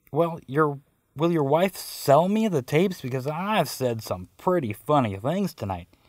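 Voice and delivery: ordinary talk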